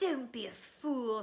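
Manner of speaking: snarled, threatening, menacing tone. Narrator reads the face's words to Harry: snarling. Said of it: "snarled the face".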